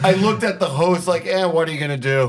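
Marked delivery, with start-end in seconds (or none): none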